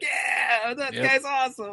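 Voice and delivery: drawn-out, slightly high-pitched horror hero voice. Imagining a horror hero's line after a kill: Bruce Campbell voice. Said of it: "he would have said it in the Bruce Campbell voice".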